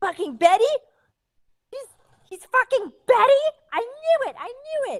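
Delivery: livid, furious shouting, very high-pitched. Voicing a wife who wakes beside her sleeping husband: furious angry yelling. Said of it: "she's so pissed off".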